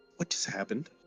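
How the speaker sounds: hushed, whispered voice. Asking a companion after a god spoke through someone: whispering. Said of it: "He whispers to Thorvax".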